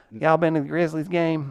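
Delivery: put-on Memphis Southern accent. Showing how a Memphis accent would sound: Memphis accent. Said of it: "How would you do a Memphis accent?".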